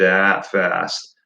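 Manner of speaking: very slow, drawn-out delivery. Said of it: "And I'm talking".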